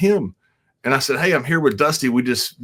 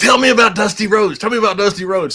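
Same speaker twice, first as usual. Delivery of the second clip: put-on eager little kid voice, high and loud; 9 semitones higher, 5 dB louder than usual. Retelling what a guest at a party said, imitating an excited little kid. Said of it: "he was like a little kid".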